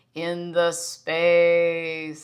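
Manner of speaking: flat robotic meditation-guide drawl with long pauses. Quoting the man behind the speaker's daily meditations, imitating his robotic voice. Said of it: "His robotic voice that he does".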